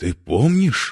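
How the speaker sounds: shocked, stunned, very high-pitched cry. Reading a character who speaks aloud without noticing, exclaiming in shock. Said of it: "потрясенно воскликнул Фродо".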